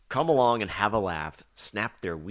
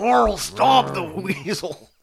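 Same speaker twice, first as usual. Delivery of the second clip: bad put-on voice, very high, very drawn out, loud; 11 semitones higher, 7 dB louder than usual. Joking about a gruesome Walking Dead version, worst Rick impersonation. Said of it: "That was my worst Rick impersonation ever".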